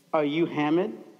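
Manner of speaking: put-on angry desk clerk voice. Retelling how the check-in desk clerk asked a question: imitating an angry desk clerk. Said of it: "she looks at me angrily and she's like".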